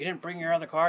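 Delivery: wild, unhinged, high, loud crazy voice. Retelling what the assistant director asked: imitating a crazy voice. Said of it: "He has this crazy voice".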